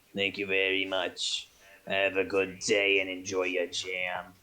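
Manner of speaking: put-on deep, old man's voice. Game narrator voicing Rubius once the buyer pays: Rubius as eighty-year-old man. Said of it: "he speaks like an eighty year old man".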